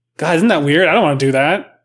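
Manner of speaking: ordinary talk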